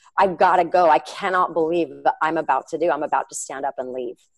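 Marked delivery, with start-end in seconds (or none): none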